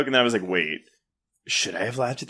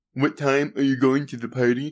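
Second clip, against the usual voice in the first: speech style of a deaf speaker. Retelling a movie character's line to another speaker, imitating Danielle talking like a deaf person. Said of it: "she talks like a deaf person".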